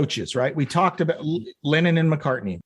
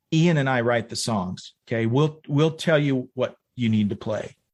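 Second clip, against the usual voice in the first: put-on deadpan flat delivery, lower pitch; 3 semitones lower than usual. Retelling what Billy said to the bass player: imitating Billy's deadpan delivery. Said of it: "completely deadpan just said".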